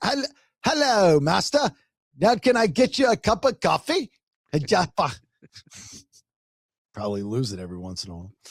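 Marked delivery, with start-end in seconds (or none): 0.0-4.1 slow, raised, fake butler-style British accent. Joking about being a butler, speaker greets an imagined master in a fake British accent. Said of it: "I would have to become British".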